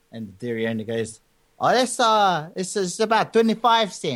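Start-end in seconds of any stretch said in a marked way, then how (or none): 1.6-4.1 put-on Samoan accent, higher, much slower. Speaker retells the dairy owner's answer to a customer, in a Samoan accent. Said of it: "this is my best Samoan accent".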